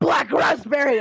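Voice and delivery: yell into a cup. Joking about how a drink gets its flavor, a mock yell. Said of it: "then they yell into it".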